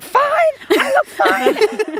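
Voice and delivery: high, slow, offended and indignant delivery. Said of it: "I'm offended".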